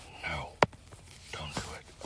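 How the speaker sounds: slow, spooky, very quiet creepy whisper. Explaining fraction steps, using a creepy voice as a memory aid. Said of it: "so creepy voice to help you remember".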